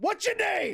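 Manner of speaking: shouting in character. Playing a character who yells threats at a vehicle: in-character yelling. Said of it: "just start yelling at the Rav".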